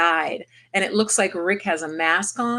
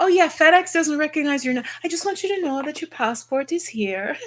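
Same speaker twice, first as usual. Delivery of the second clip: soft, gentle put-on Jamaican accent, pitched higher; 8 semitones higher than usual. Retelling what a woman said while they waited on passports, soft Jamaican accent. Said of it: "a soft Jamaican accent I really like".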